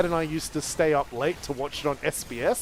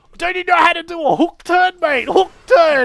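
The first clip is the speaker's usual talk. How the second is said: mock yell, higher and louder; 14 semitones higher, 12 dB louder than usual. Retelling a driver shouting from a car window: imitating someone yelling. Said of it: "he's just yelling".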